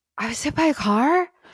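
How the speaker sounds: high, stunned, dazed disbelief.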